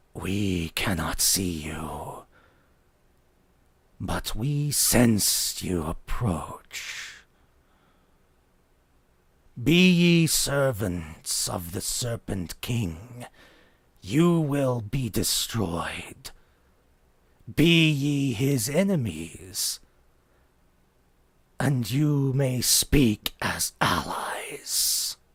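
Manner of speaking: booming, amplified skeleton voice. A game master voices the middle skeleton addressing the approaching party, in a booming voice. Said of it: "speaks in a sort of a booming voice".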